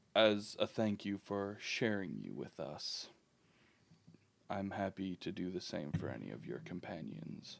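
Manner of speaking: quiet whispered aside. The elf who etched the rune speaks to you, whispering. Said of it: "he whispers to you".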